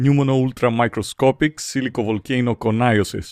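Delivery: English accent, careful pronunciation. Attempting the long compound word live on air: English accent. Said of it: "θα το κάνω και με αγγλική προφορά".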